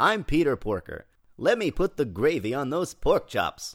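booming movie-trailer announcer voice. Playing Peter Porker flirting with a pig, the speaker sounds like the Moviefone guy. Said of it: "it still sounds like movie phone guy".

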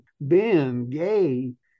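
put-on US Southern accent on the name. Retelling hearing someone call out a name behind him: Southern accent. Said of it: "I hear in this Southern accent".

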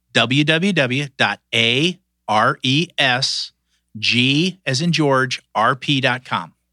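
slow delivery. Guest asked by the host to give his website address, said slowly. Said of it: "I'm going to say it slow".

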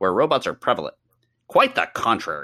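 put-on nerdy voice, as if reading aloud. Reading aloud an IMDb user's comment defending a sci-fi movie, nerd voice. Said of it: "I need to do nerd voice".

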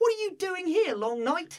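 put-on blunt, very high-pitched Cockney boy voice. Retelling what a young boy blurted out in a quiet temple, in a little cockney boy voice. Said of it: "just like a little Cockney boy".

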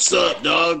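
rough, aggressive gruff voice. Player voicing their game character walking up to a person, gruff. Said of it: "walking over there real gruff".

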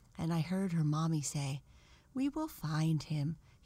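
ordinary delivery

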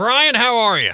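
forceful, pushy, loud, aggressive cadence. A guest greeting the host on the show, with an aggressive cadence. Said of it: "It's an aggressive cadence".

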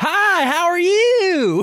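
very high Texas drawl, long drawn-out "you". Act out how he will walk in and greet you, in a super high-pitched Texas drawl. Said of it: "super high pitched Texas drawl".

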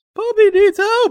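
put-on shouting character voice. Voicing Zelda as she pushes the door open: yelling as Zelda. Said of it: "and Zelda yells".

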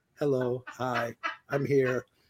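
flat, level monotone, no character voice. Imitating the theater employee who reads the movie script into a microphone, monotone voice. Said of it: "the same monotone voice".

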